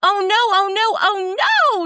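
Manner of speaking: squeaky little pixie voice, very high and slow. Narrating a pixie the party runs into in town: squeaking. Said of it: "she squeaks".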